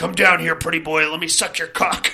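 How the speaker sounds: leering, taunting demon voice. Retelling what the possessed character yells from the basement: imitating Mia's demon yelling. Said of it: "Mia is yelling at everybody from the basement".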